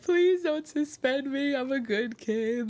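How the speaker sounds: put-on high, tearful, crying pleading voice. Retelling begging the dean not to suspend them: imitating own crying plea. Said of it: "And I cried so hard".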